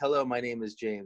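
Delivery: plain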